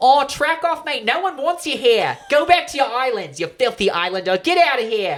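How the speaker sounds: loud put-on mock Australian accent yell.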